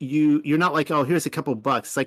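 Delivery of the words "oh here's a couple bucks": ordinary delivery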